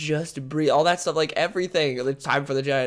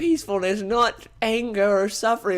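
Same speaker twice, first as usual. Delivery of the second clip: deliberately put-on British accent, pitched up; 6 semitones higher than usual. Recapping a film scene, quoting a character's line in a put-on british accent. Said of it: "that's my amazing British accent".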